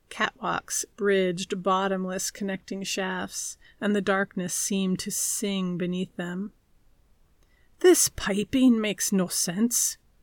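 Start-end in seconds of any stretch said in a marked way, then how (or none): 7.8-9.9 loud, grumbling, complaining tone. Norsen runs a hand along a bulkhead of knotted pipes: grumbled. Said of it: "Norsen grumbled, running a hand along a bulkhead where five pipes twisted into a knot before disappearing into the floor".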